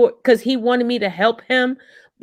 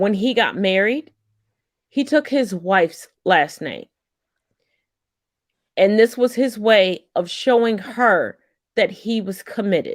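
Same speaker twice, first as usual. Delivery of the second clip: emotional, moved voice; 3 semitones lower than usual. Telling a story about a couple's marriage, emotional. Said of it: "I get emotional every time I tell this story".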